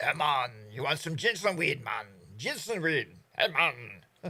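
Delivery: put-on drawn-out Jamaican accent in a man's voice. Retelling what people in Jamaica said on approach: imitating Jamaican locals. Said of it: "then you start talking like that".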